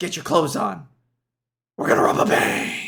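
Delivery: breathy, all one word. Recalling a funny line from a commercial, copy how he delivered it, imitating a breathy, run-together delivery. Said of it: "It's like breathy, but he says it all in one syllable".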